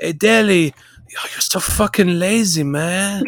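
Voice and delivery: high, slow stoner drawl, words dragged out. Retelling a coach scolding a lazy player in training: Mourinho impression. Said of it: "So he'd go".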